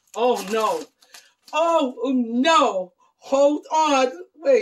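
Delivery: loud, very slow, overwhelmed cry, each "no" stretched. Opening something from Jaleesa, on the verge of a breakdown. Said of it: "I'm going to have another breakdown".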